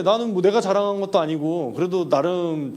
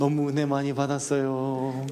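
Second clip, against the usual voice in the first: put-on motherly voice; 4 semitones lower, 4 dB quieter than usual. Pastor recounts his mother praising him on the phone, imitating his mother. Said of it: "제 어머니 성대모사 하는 건데".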